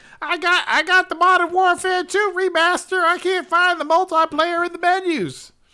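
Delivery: put-on Southern US accent, very high and loud. Mocking gamers posting on forums, imitating them in a Southern US accent. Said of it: "Why are you talking like you from the south?".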